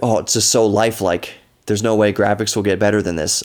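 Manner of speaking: usual speaking voice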